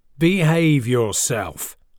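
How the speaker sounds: tough, growling voice. Joshua's dad tells his son to behave, growling. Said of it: "Joshua's dad growled".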